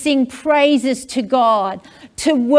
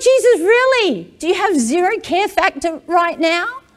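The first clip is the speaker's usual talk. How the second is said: put-on, alarmed, panicked, frightened shout; 5 semitones higher than usual. Retelling the disciples waking Jesus in the storm: imitating panicked disciples shouting. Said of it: "They're shouting at Jesus".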